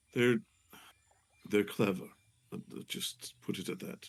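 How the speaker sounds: quiet, hushed, low-key confiding tone. Voicing a character who crawls out from under a boat, waking up: hushed tone. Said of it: "he kinda says in a hushed tone".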